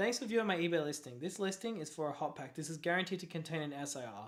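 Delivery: ordinary talk, nothing marked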